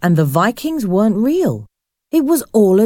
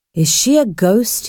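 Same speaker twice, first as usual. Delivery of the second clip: ordinary delivery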